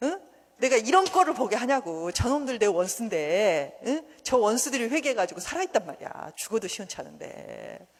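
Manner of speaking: loud, high-pitched, angry rant.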